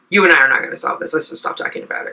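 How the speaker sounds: snappy, curt delivery. Retelling what she said to end a phone call: imitating her own snappy tone. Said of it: "But I did say snappily".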